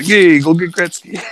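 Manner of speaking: loud, tough-guy Italian mob boss voice. Retelling how the team owners picked a player: imitating italian mobsters. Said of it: "Italian mobsters, like".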